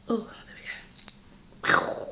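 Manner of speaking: whispered under the breath, as an aside. Speaker pauses mid-talk after taking off a noisy watch, whispering.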